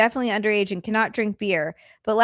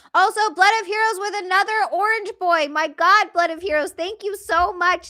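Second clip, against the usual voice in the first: very high-pitched, thrilled, excited yelling; 9 semitones higher than usual. Thanking a viewer by name during a stream, yelling excitedly. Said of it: "I'm yelling".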